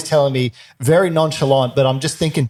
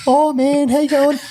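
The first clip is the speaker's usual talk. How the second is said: very high-pitched voice; 13 semitones higher than usual. Giving an example of how a friend talks: imitating a friend's high-pitched voice. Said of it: "he's got a kinda high-pitched voice".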